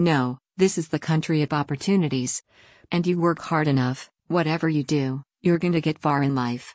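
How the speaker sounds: plain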